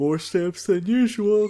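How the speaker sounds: words pulled into a very high yawn. A podcast co-host chimes in with a suggestion, talking through a yawn. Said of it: "Sorry, I was yawning".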